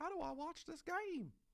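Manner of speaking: put-on elderly voice, very high pitch. Imagining someone asking their grandchildren how to watch the game, in an old person voice. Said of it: "that was my old person voice".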